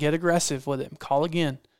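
plain

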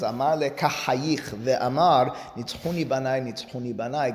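normal talking voice

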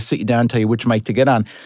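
ordinary talk, nothing marked

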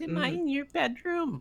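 put-on full, very high baby voice, pitched all the way up. Recapping a bedroom scene between Kelly and Brandon, Kelly baby voice. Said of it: "Remember that old Kelly baby voice?".

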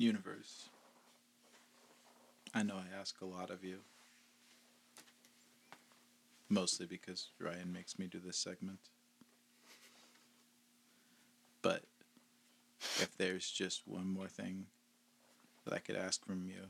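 ordinary delivery

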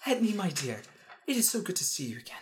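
airy, lofty, high, slightly breathy voice. Voicing Zogazar as he greets Edney again: Zogazar's high breathy voice. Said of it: "Somewhere higher. And a little breathy".

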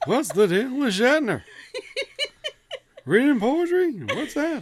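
high, swooping comic voice with wide pitch swings. Joining the joke about Shatner reading poetry: Jerry Seinfeld impression. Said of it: "Jerry Seinfeld impression".

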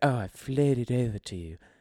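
put-on elderly English lady's accent. Imitating how a gentleman talked to the speaker, in an old British woman's accent. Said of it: "had like an old British woman's accent".

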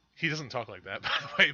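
ordinary talk

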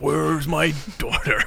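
creaky, gruff voice. Complaining about a ridiculous lead character: imitating the lead actor's delivery. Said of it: "He's just like speaking like this all the time".

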